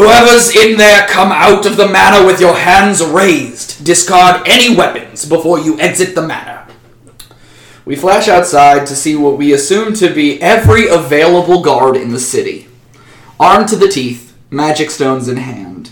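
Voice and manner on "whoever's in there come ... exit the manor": big, resounding, pitched-up booming call. Storyteller voicing a call to whoever is inside the manor, booming voice. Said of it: "In a booming voice".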